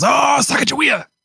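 very high-pitched yell, pitched way up. Recounting an episode, acting out what Splinter yells: imitating Splinter yelling. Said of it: "he goes".

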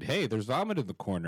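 ordinary talk

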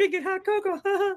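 high-pitched voice. Showing off voices he can do, a line in a high-pitched voice. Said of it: "I could do the high pitched voice too".

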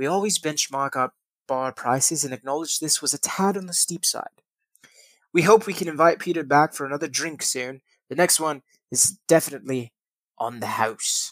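British accent. Reading a hotel's statement to CNN from an article, British accent. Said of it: "I should be doing a British voice".

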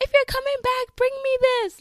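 put-on kids' very high, loud, excited shouting.

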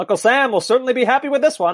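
put-on very high-pitched old-fashioned sportscaster voice. Calling an American victory over the English, in an old-timey announcer voice. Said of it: "old-timey voice, announcer voice".

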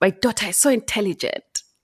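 put-on bragging, boastful tone with South African accent. Quoting a father boasting about his daughter: imitating father's South African accent. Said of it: "he had a, a, a South African accent".

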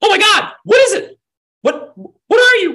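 alarmed woman screaming. Narrator describing voices the players hear from above, voicing a screaming alarmed woman. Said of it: "she's screaming, like".

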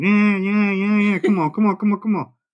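mock, high, screaming, taunting cat voice. Acting out the cat's taunts at the dog: imitating a screaming cat. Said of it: "Comes out screaming".

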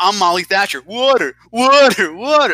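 loud, high, unkind mocking deaf voice. Retelling a man at a water pump, laughing, doing a mocking deaf voice. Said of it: "a mocking death voice".

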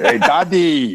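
put-on very high, loud, with a light German accent. Imitating his son greeting his daddy, with a little Schwarzenegger-like accent. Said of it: "he talks a little Schwarzeneggerish".

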